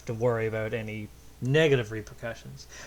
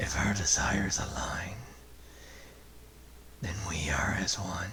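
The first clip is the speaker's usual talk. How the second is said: gravelly, rough, breathy superhero stage whisper; 4 semitones lower, 6 dB quieter than usual. Reading out a creature's quoted line in a Batman voice. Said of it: "doing the Batman voice".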